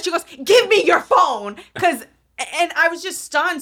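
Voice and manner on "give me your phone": put-on loud, shrieked screaming. Retelling an airport security worker's demand: imitating someone screaming. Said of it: "she screamed at me".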